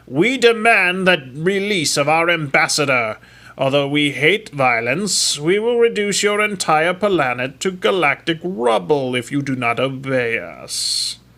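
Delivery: strange, loud, booming, resounding alien voice. Narrator reading an alien's demand from a console speaker, strange booming voice. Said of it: "a strange booming voice".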